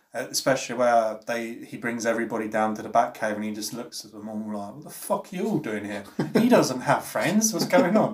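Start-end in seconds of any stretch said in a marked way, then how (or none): 4.7-8.1 mocking, heavily sarcastic, high and swooping delivery. Describing a movie scene where everyone arrives at the Batcave: sarcastic Alfred impression. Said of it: "I love his sarcasm just throughout".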